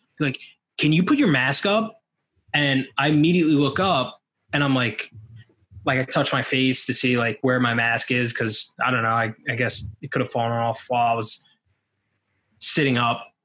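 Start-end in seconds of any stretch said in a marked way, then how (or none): 0.8-2.0 very stern, no-nonsense, pitched-up delivery. Speaker retells what a stranger told them, imitating a stern voice. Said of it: "I just hear a very stern voice".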